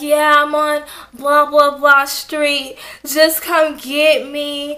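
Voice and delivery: acted sluggish drunk talk. Retelling a drunk phone call to dad asking to be picked up, mimicking slow sluggish drunk talk. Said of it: "I'm talking all slow and sluggish like this".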